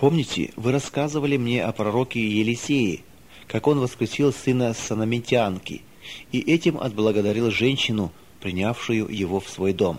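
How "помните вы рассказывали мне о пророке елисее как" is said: ordinary delivery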